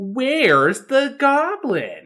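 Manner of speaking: put-on very high, swooping sing-song kids-show voice. Imitating a kids' show host asking viewers a question: imitating Dora talking to kids. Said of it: "when Dora is talking to the kids".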